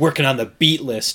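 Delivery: put-on aggressive, angry voice. Imitating Alex answering about his beat list: imitating Alex sounding aggressive. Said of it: "It sounds so aggressive".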